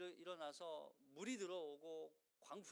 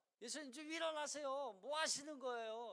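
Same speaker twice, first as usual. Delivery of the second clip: mock scolding, raised, reproachful, blaming tone; 7 semitones higher, 5 dB louder than usual. Retelling the disciples waking Jesus in the gospel, acting out scolding disciples. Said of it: "막 이렇게 마치 혼내듯".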